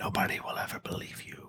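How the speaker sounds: mock half-conscious whisper. Retelling what a man whispered with half-conscious breath, imitating a breathy whisper. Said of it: "He just whispers and like half like conscious breath".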